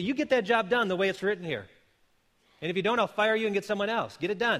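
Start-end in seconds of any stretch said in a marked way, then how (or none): none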